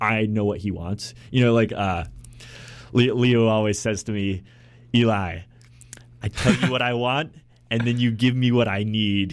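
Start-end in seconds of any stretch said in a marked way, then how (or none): 4.9-9.3 put-on Brazilian accent in English. Quoting what Leo always says to him, in Leo's Brazilian accent. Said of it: "I'm doing his accent very well".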